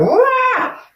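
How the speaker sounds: very high, excited squeal. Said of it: "your energy is like".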